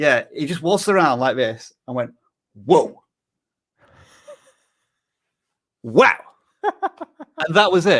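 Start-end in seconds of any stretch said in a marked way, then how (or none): 2.5-6.2 swooping, sing-song exclamation with wide pitch swings. Describing what a TV villain did all season, acting him out: Negan impression. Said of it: "I do uh, a, an impression of Negan".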